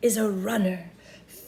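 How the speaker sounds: ordinary delivery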